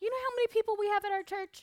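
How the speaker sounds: shrill, very high, very loud indignant outburst. Telling a story, quoting her mom who got mad: retelling Mom's angry reply. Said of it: "She got all mad".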